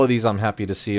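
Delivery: plain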